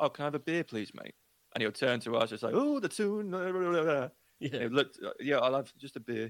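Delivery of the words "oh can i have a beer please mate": put-on toned-down, softened accent, faster. Retelling how a friend orders a beer, the speaker imitates: dampened-down accent. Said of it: "trying to dampen the accent down".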